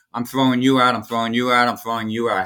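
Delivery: normal talking voice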